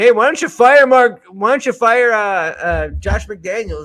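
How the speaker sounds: play-acted loud, high heckling yell. Retelling how fans yelled at a man during his speech: imitating fans yelling. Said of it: "as they were yelling at him".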